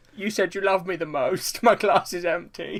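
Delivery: put-on pitiful, high, whiny baby voice. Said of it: "you do a very sort of pathetic voice sometimes".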